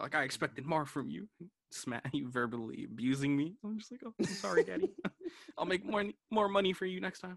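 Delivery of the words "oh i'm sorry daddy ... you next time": simpering, submissive, grovelling, high, meek pleading voice. Speaker acts out apologizing to her daddy, mock-submissive pleading. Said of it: "I start sounding like a fucking hoe to her daddy".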